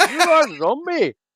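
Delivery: put-on Indian accent. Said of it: "Why did you say that in an Indian accent?".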